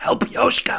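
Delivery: scratchy voice, pushed out, barely able to speak. Narrating a game turn, voicing Diamondback, who can barely speak: Diamondback's scratchy voice. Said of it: "She's in her scratchy voice".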